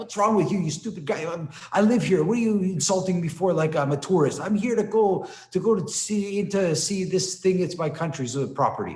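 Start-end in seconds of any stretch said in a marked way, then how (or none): 0.0-7.6 put-on indignant street-style tirade, high, laid on thick. To a man asking for his ticket, the speaker fakes an angry street yell. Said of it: "I yell to him in Greek, in a street yell".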